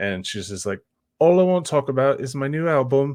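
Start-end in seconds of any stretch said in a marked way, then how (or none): 1.2-3.1 put-on British accent, pitched a touch higher. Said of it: "speaking, like, with a British accent".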